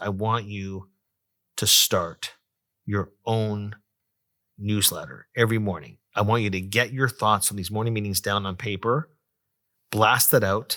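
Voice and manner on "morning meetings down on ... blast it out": ordinary talk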